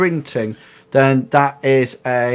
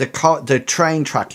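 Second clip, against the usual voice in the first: ordinary talk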